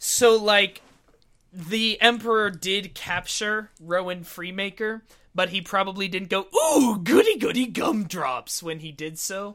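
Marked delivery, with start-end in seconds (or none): 6.6-8.6 loud cartoon villain voice with wide swooping pitch. Explaining the comedy version's canon, the speaker voices the Emperor: Lego Palpatine impression. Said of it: "a pretty good imitation of the Lego Star Wars version of Palpatine".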